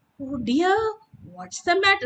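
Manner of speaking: caught off guard. Showing students one sentence said in different voices, in a surprised voice.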